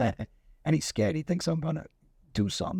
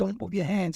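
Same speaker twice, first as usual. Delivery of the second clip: mock screaming, like a scream; 4 semitones higher than usual. Retelling a standoff, speaker quotes a man who screamed at him, retelling a scream. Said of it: "He was screaming at me".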